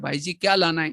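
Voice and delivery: ordinary delivery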